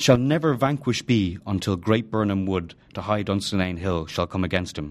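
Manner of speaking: ordinary delivery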